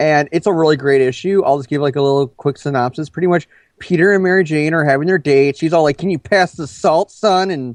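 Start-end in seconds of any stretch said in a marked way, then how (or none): 6.0-7.5 jazzy, hippie-ish, cool hip jive talk. Summarizing a comic's date scene, imitating Mary Jane's hip jive talk. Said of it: "talking all jive and cool and hippie-ish".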